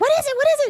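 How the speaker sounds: acted-out frantic panic, very high, repeated. Retelling a coworker's questions about the bird: imitating a freaking-out coworker. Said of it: "Coworker's still freaking out".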